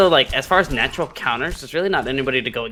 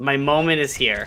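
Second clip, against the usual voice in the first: ordinary talk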